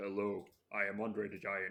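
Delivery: deep, low, hushed voice. Following up with an impression of Andre the Giant: Andre the Giant impression. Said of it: "maybe Andre does?".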